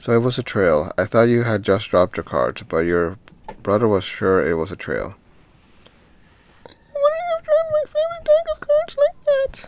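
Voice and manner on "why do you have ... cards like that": very high put-on girlish little girl voice. Voicing a girl's line to her father in the game, in a little girl voice. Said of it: "I can't make a better little girl voice".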